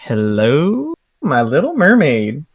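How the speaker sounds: flirtatious, slow, swooping, stretched-out "hello". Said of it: "puts a finger in his mouth and slicks back an eyebrow".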